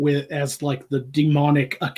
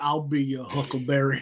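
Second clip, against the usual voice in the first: put-on Georgia accent, spoken more quietly; 7 dB quieter than usual. Chatting about a favorite Savannah, Georgia accent, doing a Doc Holliday impression. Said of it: "that is the Doc Holliday".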